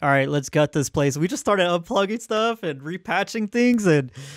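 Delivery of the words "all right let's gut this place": normal talking voice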